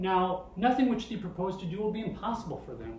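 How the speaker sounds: usual speaking voice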